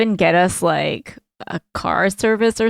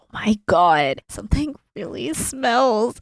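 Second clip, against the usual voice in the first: slow, loud stage whisper. Improvising a back-seat scene, speaking to the person beside you in a loud whisper. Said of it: "I'm like loud whispering".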